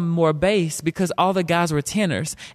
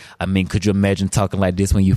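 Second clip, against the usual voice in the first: very low, deep voice from the bottom of the chest; 10 semitones lower than usual. Explaining why his preschool friends wouldn't play with him: very deep voice. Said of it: "because I had a deep voice".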